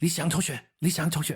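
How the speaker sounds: put-on fast speech. Parent retelling their ten-year-old son in the back seat: imitating son saying it super fast. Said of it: "he's saying it super fast".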